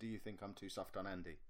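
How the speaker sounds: normal talking voice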